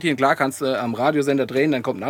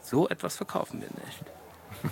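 put-on whispered, hushed, slow, disgusted tone; 3 semitones higher, 13 dB quieter than usual. Quoting what someone said on the phone, in a mock-disgusted tone. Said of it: "So mit angewidertem Tonfall".

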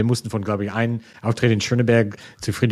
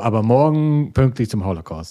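put-on lecturing tone with a Berlin accent. Mimicking a reminder about tomorrow's punctuality, imitating a lecturing Berlin tone. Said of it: "in dieser belehrende Berliner Ton so".

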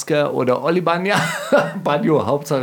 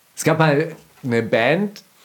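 usual speaking voice

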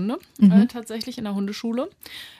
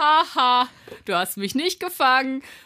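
mocking, pitched-up neener-neener teasing taunt; 5 semitones higher than usual. Retelling how she ran past and grinned back, imitating a grinning taunt. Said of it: "du siehst dieses Grinsen in ihrem Gesicht so".

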